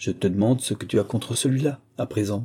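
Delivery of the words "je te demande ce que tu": plain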